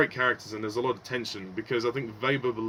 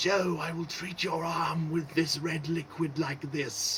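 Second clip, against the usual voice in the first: put-on whispery voice, much higher and slower; 6 semitones higher than usual. Reviewing the acting, show how Wester talks, in Wester's weird whispery voice. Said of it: "He kind of whispers like this".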